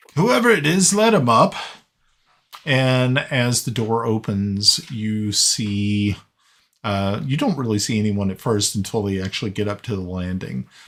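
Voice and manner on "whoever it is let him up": very high, loud shout. Voicing a character who shouts down a staircase to let someone up. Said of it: "he shouts down".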